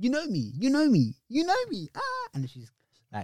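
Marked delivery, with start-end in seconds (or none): 0.0-1.9 acted-out, very high, loud drunk girl voice. Retelling what a drunk girl on a train kept saying: imitating a drunk girl. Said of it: "she's drunk. She's going".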